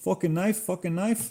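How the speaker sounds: put-on Chinese accent with very high pitch. Retelling what a fast food manager always said: imitating manager's Chinese accent. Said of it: "But he had an accent".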